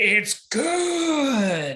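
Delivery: unhinged, very high psycho voice, "good" stretched out. Retelling how a movie character answers a dance invitation: imitating a total psycho. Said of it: "He gives her this look like a total psycho and goes".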